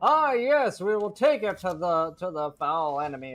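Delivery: very slow, courtly gentleman's voice. Recalling how a man in an Elder Scrolls game sounded: gentlemanly guy voice. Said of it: "he just sounded like a gentlemanly guy".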